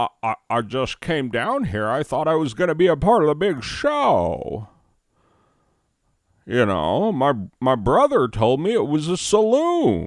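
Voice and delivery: bad put-on old-timey voice, loud and swooping. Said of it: "the third worst Jimmy Swaggerty impression".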